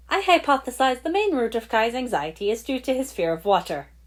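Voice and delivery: happy, sing-song robot voice. Narrator reads Zane's remark about Kai in the story, cheerful robotic voice. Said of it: "in his cheerful robotic tone".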